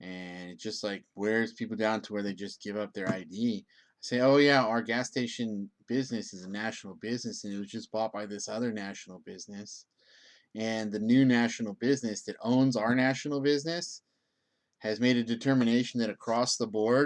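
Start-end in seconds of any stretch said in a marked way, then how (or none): none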